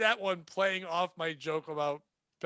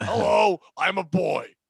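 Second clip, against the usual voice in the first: very loud, very slow, rasping throat voice-box croak; 3 semitones higher, 10 dB louder than usual. Imitating someone with an old man's throat box voice. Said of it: "you have a ninety-seven-year-old man's voice who has a throat box".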